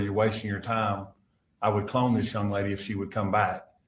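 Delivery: ordinary talk, nothing marked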